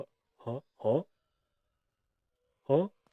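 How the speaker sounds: put-on confused, surprised tone. Retelling a reaction after being told to use walkies: imitating own confused reaction. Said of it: "fully confused".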